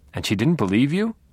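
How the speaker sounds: plain, incredulous disbelief. The narrator questions Deb about what happened, incredulous. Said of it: "I asked incredulously".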